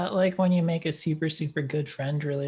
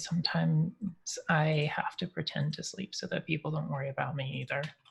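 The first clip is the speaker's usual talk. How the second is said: hushed, soft, close half-whisper; 7 dB quieter than usual. Sidling up alongside Sinisa in character to reassure her, half-whispering.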